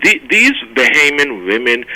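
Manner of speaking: ordinary talk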